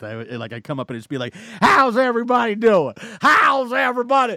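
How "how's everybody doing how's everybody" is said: put-on excited voice, higher and louder. Retelling an opening bit from a stand-up act: imitating own excited stage greeting. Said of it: "very excited in my act".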